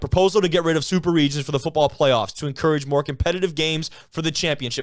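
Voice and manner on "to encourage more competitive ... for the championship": ordinary talk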